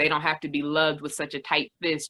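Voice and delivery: ordinary delivery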